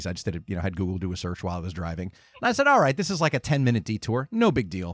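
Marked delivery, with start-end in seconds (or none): none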